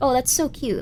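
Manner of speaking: ordinary talk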